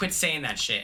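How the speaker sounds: usual speaking voice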